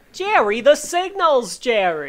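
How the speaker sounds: put-on loud, swooping New York accent. Discussing a character's strong accent, the speaker imitates him: New York accent.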